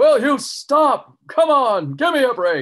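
booming wrestling announcer style voice.

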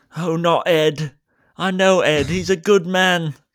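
put-on very loud, high-pitched Cockney accent. Improvising as a boss speaking to the driver he hired, cockney accent. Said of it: "I can tell you got an 100% authentic Cockney accent".

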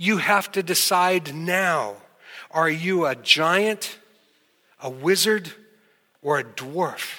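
long, stretched-out yell. Retelling calling out to a room of excited children: imitating own yell. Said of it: "and I yelled out".

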